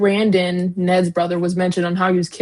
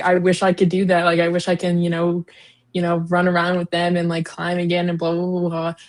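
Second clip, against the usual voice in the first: ordinary talk, nothing marked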